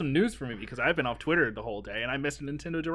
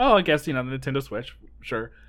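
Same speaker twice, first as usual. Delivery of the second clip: plain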